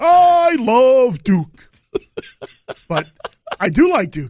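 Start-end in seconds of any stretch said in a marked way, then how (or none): 0.0-1.7 high, loud, very slow sportscaster-style shout. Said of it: "my best Dick Vitale voice".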